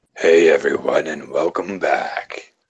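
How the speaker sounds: voice dropped as low as it goes. Asked to do the low voice, a speaker tries a low-voice Undoomed impression. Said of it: "doing the low voice".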